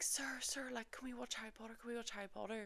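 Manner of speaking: excited, high, hushed, pleading schoolgirl whisper.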